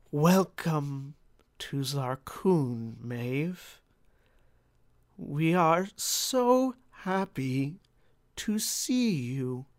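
several voices woven together in unison. A game master voices four figures speaking in unison to Maeve: four voices in unison. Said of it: "their voices seem to be tied together with a fifth voice".

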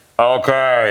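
loud, booming, through a speaker. Retelling how the director called out through a speaker: Joel Schumacher's booming voice. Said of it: "giant booming voice".

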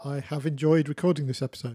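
insincere, unconvincing tone. Co-host at the end of recording an episode, sounding insincere. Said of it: "That sounded really insincere".

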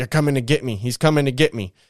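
plain

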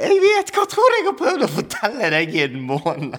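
mock tearful talk, crying, swooping high pitch. Retelling his reply to a man on the phone as he began crying: retelling crying while talking. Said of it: "Og jeg begynner å grine".

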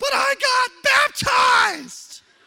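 very high, very loud, shrill, raspy, drawn-out, upset scream. Retelling how a child screamed during discipline: imitating a child screaming. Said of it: "she just screams".

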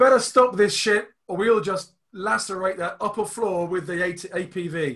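woman's voice calling out, pitched high. Game narrator voicing a character the players hear, in a shouting female voice. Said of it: "a female voice, shouting".

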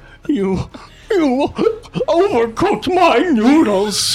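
very high voice, weeping and sobbing. The narrator voices a man who falls to his knees: weeping. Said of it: "he falls to his knees, weeping".

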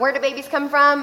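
normal talking voice

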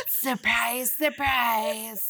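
raspy put-on voice. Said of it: "like, raspy voice".

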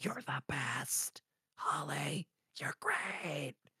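very quiet, very hushed shouted whisper. Describing a show character praising a woman, imitating a whisper yell. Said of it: "He's like whisper yelling".

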